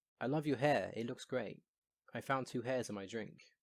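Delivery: ordinary delivery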